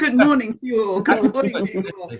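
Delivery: high, loud talk spilling through laughter. Greeting everyone after a co-host's joke, still laughing while talking. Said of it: "I'm too busy laughing".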